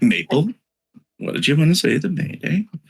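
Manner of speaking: slow, sing-song kindergarten-teacher voice. Putting a question to someone in a kindergarten teacher tone. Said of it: "I'm saying it with the tone of like a kindergarten teacher".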